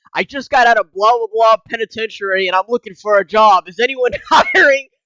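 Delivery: loud, screamed, shouted voice. Retelling how a man on a train started screaming: imitating a man screaming. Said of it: "starts screaming".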